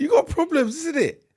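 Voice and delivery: mocking, very high, slow squeaky voice.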